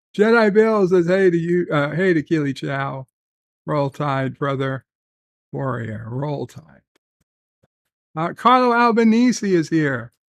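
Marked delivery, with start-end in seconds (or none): none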